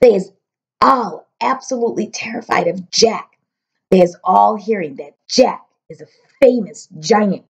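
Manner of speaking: ordinary delivery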